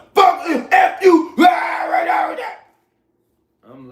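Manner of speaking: put-on loud, very slow, drawn-out drunken hollering. Retelling a drunk man yelling back at the speaker: imitating a drunk man yelling.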